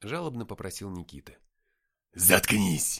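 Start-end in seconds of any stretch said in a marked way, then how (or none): 2.1-3.0 barked out sharply at much lower pitch. Narrator reads the hero and the Nephilim together cutting off Nikita: barked. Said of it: "рявкнули мы".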